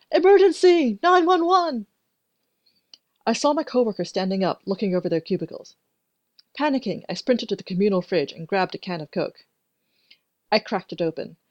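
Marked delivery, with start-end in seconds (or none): 0.1-1.8 shrill, very high-pitched shout. A coworker yells again across the office: yelling. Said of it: "She yelled again".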